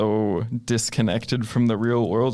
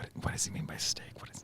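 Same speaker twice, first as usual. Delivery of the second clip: very quiet, hushed, breathy whisper. In a roleplay game, a character behind a tent, whispering. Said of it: "kind of whisper".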